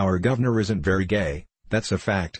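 ordinary delivery, nothing marked

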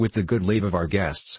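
plain

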